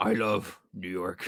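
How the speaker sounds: bone-dry, low, slow delivery. Quoting a line Kingpin says in an episode: dry Kingpin impression. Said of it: "super dry and, like, totally, like, his awkward self".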